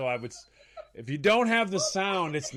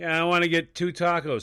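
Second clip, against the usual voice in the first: ordinary talk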